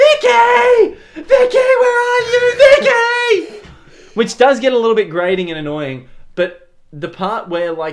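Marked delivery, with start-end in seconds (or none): 0.0-3.7 very high, very slow, drawn-out, loud screaming call. Retelling a film scene where the mother searches for her daughter: imitating a mother screaming. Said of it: "the mum screaming".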